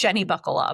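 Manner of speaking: quick, instant blurted-out words. Retelling blurting out a cover line in the van: retelling own blurted line, really fast. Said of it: "really fast".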